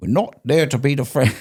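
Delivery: clumsy, high-pitched, bad put-on British accent. Retelling what a coworker said on a video, imitating Shimon's British accent. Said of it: "I wish I could do it a British accent".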